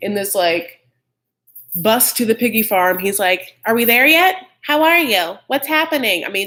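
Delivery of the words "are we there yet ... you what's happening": put-on high, childish little kid voice. Retelling someone riding a bus to a farm: imitating a little kid. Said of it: "it's like a little kid in the back seat".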